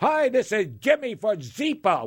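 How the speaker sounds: put-on radio pitchman, New York accent. Imitating an annoying commercial that keeps playing, do the Zipa commercial voice with a New York accent. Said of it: "with that New York accent".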